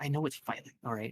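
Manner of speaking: hushed whispering. Retelling what others said, the speaker acts out their line, whispering. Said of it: "Like, whispering".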